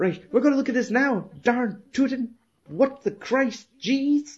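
furious, very high, rapidly rattled-off swearing rant. Speaker quotes a furious man rattling off swear words: retelling an angry swearing rant. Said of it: "he's that fucking angry".

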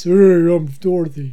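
put-on voice dropped way down deep. Imitating a very tall woman introducing herself, in a put-on deep voice. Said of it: "Deep voice".

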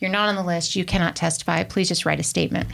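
plain

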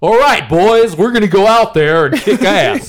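put-on high barked delivery in a terrible American accent. Mocking a movie actor barking orders: Chris Hemsworth's bad American accent barking orders. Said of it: "the whole movie is him barking orders and like".

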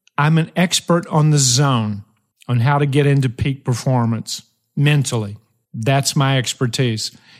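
plain

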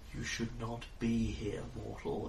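soft, echoing, multi-layered many-voiced sound. Narrating a scene, voicing a telepathic presence addressing a mortal, echoing multi-pronged voice. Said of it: "multi-pronged voice you hear telepathically echoing in your head".

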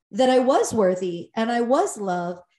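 ordinary talk, nothing marked

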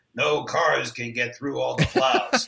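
weird, gravelly, rasping put-on narrator voice. Retelling mocking a video narrator for a class: imitating a weird gravelly voice. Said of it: "making fun of the way that guy spoke".

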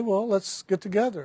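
normal talking voice

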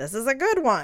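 put-on Italian-American New York accent. Imagining what the speaker's grandfather would say about her: grandfather's new york italian accent. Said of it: "in his New York Italian accent".

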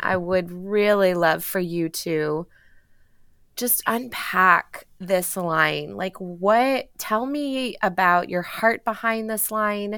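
trembling, shaky voice, close to tears. Asking the host to unpack his episode-closing phrase, in a shaky voice. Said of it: "with my shaky voice for a moment".

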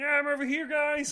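frog puppet character voice. Joining the room as Kermit the Frog: Kermit the Frog voice. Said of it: "Kermit's there".

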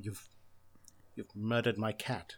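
mock quiet trembling rage. Retelling a scene, the speaker acts out a man whose cat is dead, imitating quiet quivering rage. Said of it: "quivering with rage, but he's so quiet".

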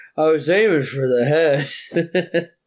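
slow, loopy, drugged-sounding drawl. Retelling a character's line from a show, imitating a loopy drugged voice. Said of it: "all morphined up or whatever after getting a tooth pulled".

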